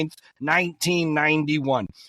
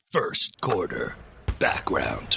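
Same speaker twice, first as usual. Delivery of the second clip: whispered, hushed, breathy documentary-style narration; 12 semitones lower, 5 dB quieter than usual. A speaker makes his narrator debut on the show, in narrator voice. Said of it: "I'm ready to be narrator voice".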